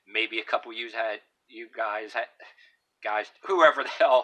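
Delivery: holding back laughter. Starting a story to the listeners, trying not to laugh. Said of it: "I'm trying not to laugh".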